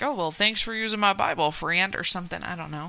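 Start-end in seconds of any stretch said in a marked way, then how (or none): 0.0-2.0 put-on, laid-on Texas accent. Chatting about a presidential swearing-in, one speaker voices Abe Lincoln with Texas accent. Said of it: "Why is he from Texas?".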